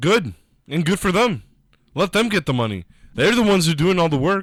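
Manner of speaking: passionate, heated, emphatic rant. Speaking into a microphone during a discussion, giving his opinion; shouting. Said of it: "You don't have to shout into it".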